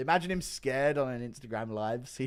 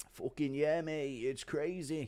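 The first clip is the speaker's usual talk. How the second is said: celebrating, triumphant cheering exclamation; 3 semitones higher, 5 dB quieter than usual. Doing a chat-requested impression of Aspinall celebrating in the cage. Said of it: "Impression of Aspinall on the cage".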